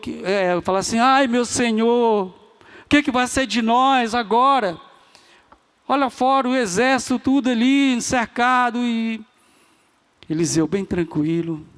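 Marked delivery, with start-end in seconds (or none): 1.0-8.8 mock, high, frantic, desperate cry. Retelling a man's cry on seeing an army all around: acting out a desperate cry. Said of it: "entra desesperado e fala assim".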